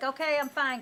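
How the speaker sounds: loud dismissive brush-off.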